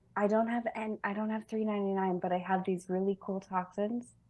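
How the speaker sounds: soft, secretive half-whisper under the breath. Offering a worker vials instead of money, half-whispering. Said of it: "I'm gonna whisper".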